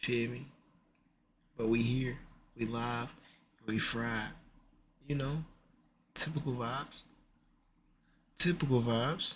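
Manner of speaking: hushed, whispered voice. Talking to viewers while a nephew sleeps in the other room; whispering. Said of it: "I'm only whispering because my nephew".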